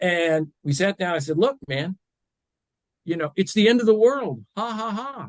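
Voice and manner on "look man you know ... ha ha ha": mock, heavily sardonic, pitched-up delivery. Retelling what he told his kids after being fired: imitating own sardonic tone. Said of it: "very sardonic".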